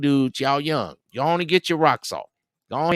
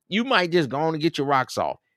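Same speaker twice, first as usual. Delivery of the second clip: ordinary talk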